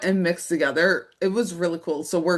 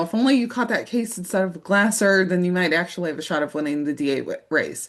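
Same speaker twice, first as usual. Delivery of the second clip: usual speaking voice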